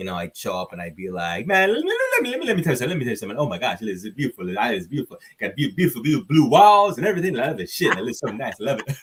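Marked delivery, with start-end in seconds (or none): 1.5-9.0 loud, fast, lively patter with swooping pitch. Show the one impression that people really used to like, an Eddie Murphy impression. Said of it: "you gotta do the Eddie Murphy laugh".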